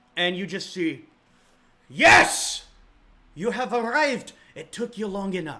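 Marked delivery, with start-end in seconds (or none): 1.9-5.6 put-on loud, high Irish accent. Game master voicing Torsten greeting arriving players, Torsten in accidental Irish accent. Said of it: "I went Irish".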